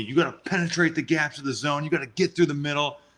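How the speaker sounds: urgent, insistent, emphatic delivery. Acting out the man who called timeout and yelled at you about the zone, imitating someone yelling. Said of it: "he's yelling at me".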